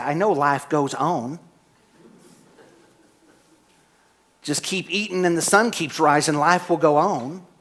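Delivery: put-on frustrated, fed-up teenage-sounding voice. Retelling an angsty teenager's reply to a mother: imitating own frustrated teenage retort. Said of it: "I'd get frustrated and say".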